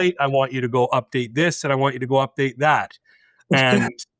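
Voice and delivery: ordinary delivery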